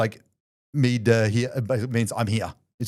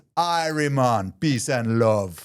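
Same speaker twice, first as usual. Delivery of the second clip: put-on heavy Jamaican accent, laid on thick, drawn out. Retelling how the driver who picked them up greeted them: Perry's thick Jamaican accent. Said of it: "thick accent".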